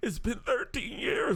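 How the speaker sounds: high, slow, quivering mock voice.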